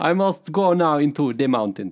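put-on unconvincing Russian accent. Retelling a video where a bear runs from gunfire; Russian bear voice. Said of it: "It's like a Russian bear".

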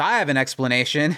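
plain

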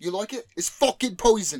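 bad put-on English accent. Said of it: "Terrible English accent, guys".

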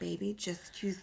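gentle, soft voice.

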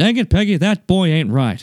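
cartoon-style Texan dad voice with Texas accent. Talking with another speaker about doing impressions: Hank Hill impression. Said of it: "all I can do right now is Hank Hill".

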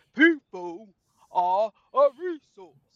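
booming, very loud, very slow drawl, every word dragged. Showing Raven how the line must be said, in a Negan voice. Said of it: "You have to say it in Negan's voice".

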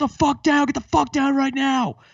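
shrieked, screaming, very high voice. Retelling how police officers with machine guns ordered them down: imitating police screaming.

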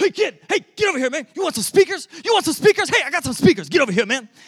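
very loud, shrill, high-pitched hollering. Retelling a rough-looking guy calling from his van: imitating a guy yelling. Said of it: "he just keeps yelling it at me".

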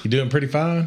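put-on neutral accent hiding Texas accent. Greeting another speaker while trying to talk like a normal person: put-on normal accent, hiding Texas accent. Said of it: "I'm gonna try to talk like a normal person today".

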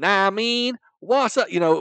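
very loud, very high, put-on American accent. Describing how people do American accents, the speaker demos a put-on American slang accent. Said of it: "when they do an American accent".

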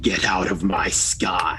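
very deep, low, rumbling voice. A game master voices what one player hears, in a thunderous voice. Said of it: "you hear the same thunderous voice".

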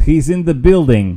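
very loud, high, bad, overdone fake Russian accent. Quoting a line by a man faking russian, in a bad russian accent. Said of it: "his Russian accent".

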